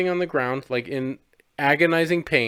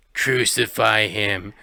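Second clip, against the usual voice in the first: very low, demonic, evil voice; 7 semitones lower than usual. Retelling a scene about the devil: evil voice. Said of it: "evil voice is like".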